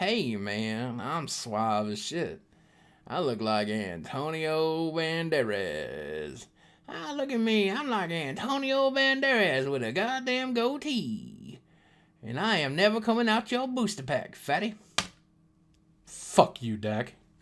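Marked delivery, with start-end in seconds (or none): 0.0-14.7 drawn-out character voice with big pitch swoops. Opening a booster pack, imitating a card's character: Dack Fayden impression. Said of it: "He's all like".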